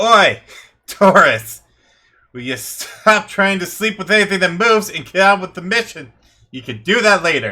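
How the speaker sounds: shrill, very high, very loud dwarf woman yell. Narrating a game, voicing a dwarf woman calling out mid-mission: dwarf woman shouting. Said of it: "the dwarf female shouts out and goes".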